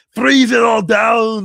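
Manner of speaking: very loud, very high, slow, rough, booming action-movie growl. Hearing 'freeze it all down' and instantly doing Arnold Schwarzenegger voice. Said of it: "I instantly went into the voice of Arnold Schwarzenegger".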